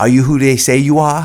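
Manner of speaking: put-on Boston accent, laid on, high and loud. Retelling a podcast clip where a woman asks a question, imitating Boston accent. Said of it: "She has this Boston accent or something".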